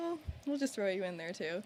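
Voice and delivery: normal talking voice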